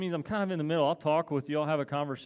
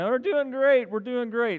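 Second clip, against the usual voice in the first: crowd shouting, raised and high-pitched; 8 semitones higher, 6 dB louder than usual. Imitating online viewers screaming back a reply to the greeting: imitating people screaming. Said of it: "are screaming".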